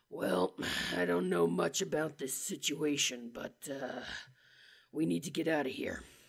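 rough, breathy, gravelly whisper. Demonstrating an easy go-to voice for characters, a gravelly voice. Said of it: "you can always go gravelly".

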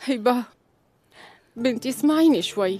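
sad, sorrowful, heavy-hearted. A mother asking her daughter to listen to her, sad. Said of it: "لا تبلشي تبكي".

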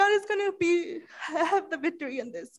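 tearful, crying voice, words strained. Retelling their own words to someone, retelling words said in tears. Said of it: "con lágrimas".

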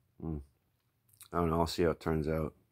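plain

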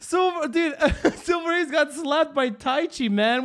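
loud, high, hard laughing outburst.

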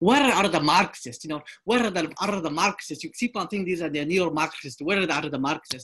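horrible, bad put-on Slovenian-accented delivery. Quote Zizek in his debate with Peterson, doing Zizek in a horrible Slovenian accent. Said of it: "that was a horrible Slovenian accent".

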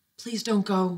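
hushed whisper. A woman to the man stepping into the machine, whispered. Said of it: "she whispered".

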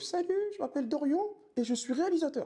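put-on very high, tiny small child's voice. Recalling filming himself at ten in front of the mirror; his small childhood voice. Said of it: "avec ma petite voix de l'époque".

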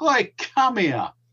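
put-on high-pitched shout. Speaker recounts searching a street after a bomb, retelling a shout. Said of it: "I just shouted".

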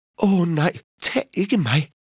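very high, begging, pleading cry. The middle billy goat answers the troll who threatens to take him; begging. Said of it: "bad den mellemste bukkebruse".

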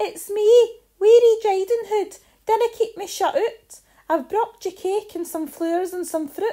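tiny, wee, very high squeaky voice. Reading a fairy tale, the wolf at Granny's door, in a wee squeaky voice. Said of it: "The wolf put on a wee squeaky voice and said".

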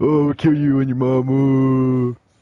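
loud, slow mocking taunt with "mom" drawn out. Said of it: "they were just like".

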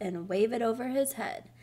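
plain

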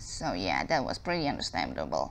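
low, soft, odd-sounding voice.

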